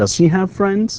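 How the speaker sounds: pitch climbs upward on friends. English lesson drilling yes-no questions: rising intonation on 'friends'. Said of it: "لاحظ ايش the rising uh, intonation".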